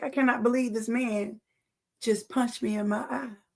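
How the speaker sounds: tearful, sobbing, crying voice with disbelief. Retelling being punched in the eye: retelling own past crying. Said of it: "I'm crying like".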